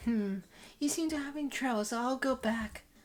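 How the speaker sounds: put-on quick high girlish character voice.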